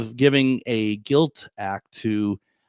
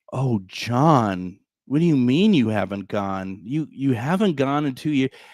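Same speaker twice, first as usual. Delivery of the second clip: gentle, reproachful guilt-tripping tone, name drawn out. Retelling how a woman questioned John at the table, imitating a guilt-tripping tone. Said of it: "it was kind of like the the guilt".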